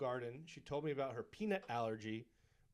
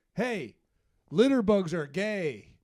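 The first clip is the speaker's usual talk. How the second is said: shrill, very loud, high-pitched yelling shout; 6 semitones higher, 14 dB louder than usual. Retelling a guy across the parking lot yelling at him; imitating a guy yelling. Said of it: "he yells out".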